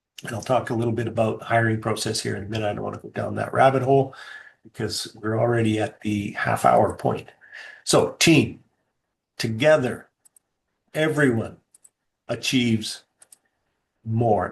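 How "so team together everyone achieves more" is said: very slow, deliberate, each word spaced out. A speaker to an audience says a motto very slowly so it sinks in. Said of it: "I said that really slow like that purposefully".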